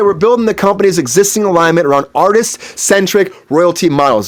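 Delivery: ordinary talk, nothing marked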